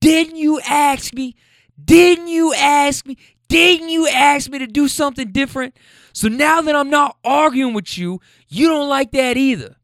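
very high-pitched, shrill screaming. Retelling a couple's argument, acting out the woman's side, retelling her screaming. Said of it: "And she's screaming".

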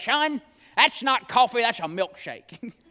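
rough, growly, raspy voice. Retelling what a church deacon used to say to him about his coffee, D.L. Hendon's growly raspy voice. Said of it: "had this real growly, kind of raspy voice".

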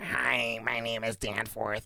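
soft, slow, awkward nerdy voice. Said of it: "such an awkward, like, nerdy voice".

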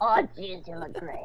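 whispered, breathy, hushed gravelly rasp. Acting out a character's line, in a gravelly voice. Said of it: "Like mouthful of gravel".

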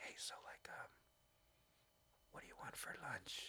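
secretive, very soft, hushed, barely voiced whisper. Retelling whispering to her sister so Alexa won't hear, retelling a whisper. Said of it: "I'll whisper to her".

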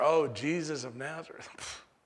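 put-on, very slow, drawn-out sneering drawl. Imagining how enemies said a title, with a mock sneer. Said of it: "His enemies probably said it with a sneer".

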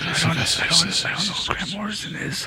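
hushed whispered aside. During a recorded discussion about comics, one participant adds an aside: whispering. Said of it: "I'm just whispering".

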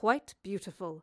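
ordinary delivery

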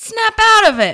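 very high, very loud, slow, drawn-out shout. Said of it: "let me say it like how she would say it".

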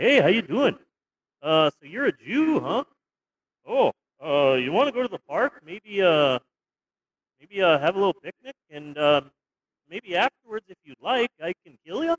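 put-on, mock-friendly Canadian voice. Comparing American and Canadian Nazis, speaker acts out a Canadian one: mock-nice Canadian Nazi voice. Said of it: "but a Canadian Nazi is just like".

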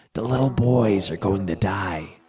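soft, terrified, hushed whisper. Narrator voicing a camera assistant grabbing the narrator by the lapels, soft terrified whisper. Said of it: "whispered in a soft but terrified voice".

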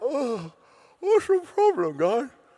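groggy, just-woken drawl. Retelling a story, voicing Jesus just woken: half-asleep Jesus voice. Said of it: "half asleep".

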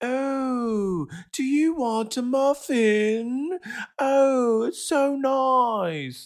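put-on very high, very slow baby talk, stretched "oh". Complaining about how Aisha talks to everyone, imitating Aisha talking to a child. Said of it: "She talks to everyone like they're a child".

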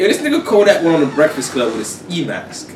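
ordinary talk, nothing marked

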